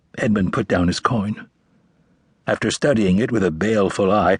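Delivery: ordinary delivery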